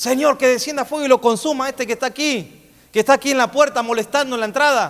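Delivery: zealous, fervent voice.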